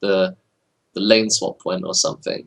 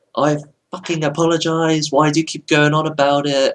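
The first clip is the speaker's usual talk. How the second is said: mock furious outburst, high, shouted swearing; 6 semitones higher than usual. Retelling how a man reacted after apologizing, imitating someone shouting and swearing. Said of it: "he starts shouting and swearing".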